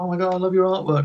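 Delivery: put-on starstruck, gushing, geeked-out fan voice. Retelling meeting an artist in a kitchen: imitating own geeking out. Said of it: "That's where I do geek out".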